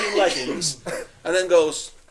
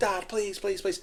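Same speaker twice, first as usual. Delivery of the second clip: put-on crying, tearful, pleading little boy's voice; 9 dB quieter than usual. Retelling his crying son begging at sports day: imitating a crying child pleading. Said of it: "He starts fucking crying. He's going".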